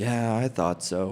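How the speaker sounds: acted very low, grave, hushed, somber murmur. Act out the man's reply to those owning up about his garage, imitating a really somber voice. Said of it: "like in a really somber voice".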